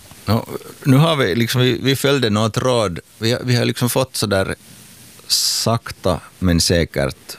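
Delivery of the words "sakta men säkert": sakta stressed, whole phrase slow. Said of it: "med betoning på sakta".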